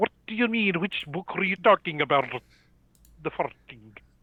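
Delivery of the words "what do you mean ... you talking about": put-on Scottish accent, pitched higher. Imagining how someone else would ask a question: scottish accent impression. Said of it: "I can hear him in a Scottish accent say".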